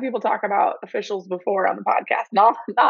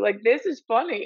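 giggling through the words while speaking. Reacting to a funny story, giggling while talking. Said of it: "I can't stop giggling".

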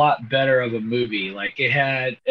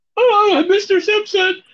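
put-on very high, loud, yelping teenager voice; 5 dB louder than usual. Apologizing to viewers for a scratchy voice, sounding like the Simpsons pimple-faced teenager. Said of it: "Like the pimple-faced teenager from The Simpsons".

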